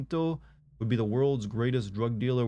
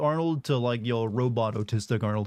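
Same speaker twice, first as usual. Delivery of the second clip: normal talking voice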